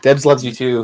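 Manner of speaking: high-pitched yelling. Telling another speaker that debs loves her too: yelling into the microphone. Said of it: "Sorry, I'm yelling into the microphone".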